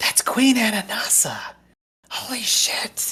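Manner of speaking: slow, breathy, hushed whisper. Voicing a character who tells a companion who the queen is: whispering. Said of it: "just whisper to her".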